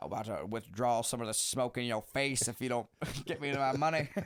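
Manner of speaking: semi put-on old-timey 1940s-style voice. Imagining a scene in a bank, in an old-timey forties voice. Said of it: "very like forties".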